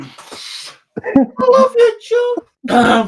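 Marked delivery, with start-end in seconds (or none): 1.0-3.1 helium-balloon-like high voice. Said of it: "I'm there with the balloon".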